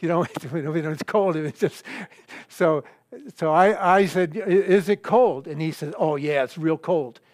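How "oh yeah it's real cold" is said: mock sarcastic tone, faster pace. Retelling an older brother's answer about the water, imitating brother's sarcasm. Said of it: "it's that sarcastic voice that he says it's cold".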